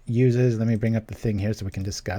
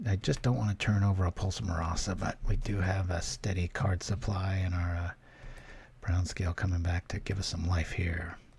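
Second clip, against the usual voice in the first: hushed whisper, lower and quieter; 3 semitones lower, 8 dB quieter than usual. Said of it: "I don't know why I started whispering".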